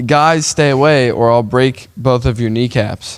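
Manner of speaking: normal talking voice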